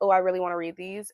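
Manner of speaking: ordinary delivery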